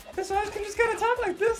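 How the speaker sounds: high squeaky cartoon voice. Speaker showing how every goblin in their campaign sounded: Mickey Mouse voice. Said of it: "every single goblin they ran into was just Mickey Mouse".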